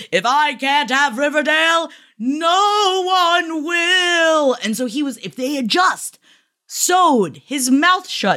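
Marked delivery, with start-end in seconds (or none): 0.1-4.6 high, rising yell with "no" stretched long. Telling a story as Mr. Cypher takes him, imitating Percival yelling. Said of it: "Percival yells".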